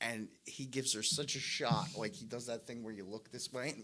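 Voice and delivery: ordinary talk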